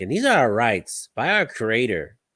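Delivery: bad, even-toned, level host speaking voice. Retelling how a channel's host speaks: bad impression of an even-toned channel host. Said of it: "I don't do a very good impression".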